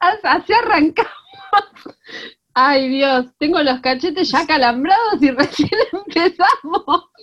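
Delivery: laughing through words. Just introduced and welcomed by Georgie, laughing while talking. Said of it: "¡Me estoy riendo!".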